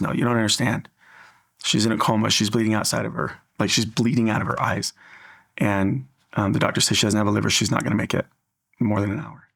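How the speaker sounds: plain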